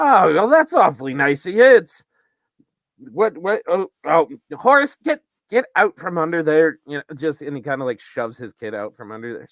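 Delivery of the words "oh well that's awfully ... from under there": bumbling, flustered dwarf voice, high and loud. Voicing a dwarf father greeting a newcomer: voicing a dwarf father. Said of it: "dwarf's dad kind of realizing".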